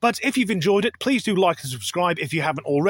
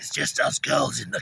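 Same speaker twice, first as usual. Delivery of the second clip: low, creaky, sleazy put-on creepy-pervert voice; 5 semitones lower, 4 dB quieter than usual. Reacting to a Top Gear clip, doing the creepy pervert voice. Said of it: "doing the creepy pervert voice".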